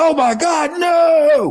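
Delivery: mock very slow, high, drawn-out terrified cry. Retelling a play where the player turned and ran: imitating a panicked player. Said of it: "He's like".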